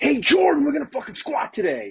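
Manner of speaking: very high, swooping, over-the-top over-excited voice. Imagined squat-day greeting to Jordan, with way too much energy. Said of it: "tries way too hard with way too much energy and enthusiasm".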